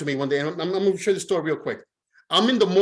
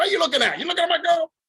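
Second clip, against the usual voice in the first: mock-irate man voice, much higher and faster; 11 semitones higher than usual. Telling a story, speaker acts out a man who thought he eyed his girl: imitating an irate man. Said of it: "He's all irate".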